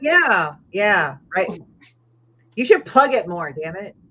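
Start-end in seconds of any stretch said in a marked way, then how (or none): 2.5-3.9 nagging, teasing scolding tone. Urging the other speaker to promote his work more: yelling at someone. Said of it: "I'm just yelling at Steven".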